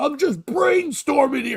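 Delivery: mock screaming rant, pitched very high. Retelling another comedian's onstage screaming bit; imitating a comic screaming. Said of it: "that kind of man down by the river screaming".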